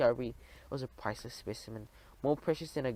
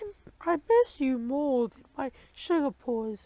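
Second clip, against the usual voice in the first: very high, loud, slow squeak; 13 semitones higher, 6 dB louder than usual. Reading a story aloud, Uncle Gopher kisses Aunt Sweeper back, Uncle Gopher squeaking. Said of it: "he squeaked".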